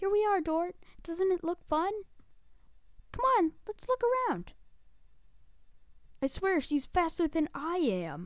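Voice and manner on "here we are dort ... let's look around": high, rushed, overexcited, hyperactive put-on princess voice. Playing through a game, voicing the damsel in distress in a hyperactive princess voice. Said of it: "I just love [name] at the beginning of this game. She's so hyperactive".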